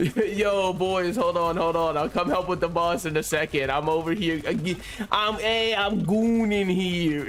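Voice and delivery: over-the-top New York accent, laid on very thick. Playing a video game with the boys, call out to them in an extremely New Yorker voice. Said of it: "Extremely New Yorker voice".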